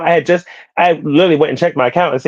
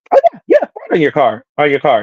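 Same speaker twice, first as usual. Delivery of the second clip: put-on bright, bubbly, chipper, sing-song cheerful voice. Retelling a call with a fraud department agent, imitating her chipper voice. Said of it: "She's so chipper".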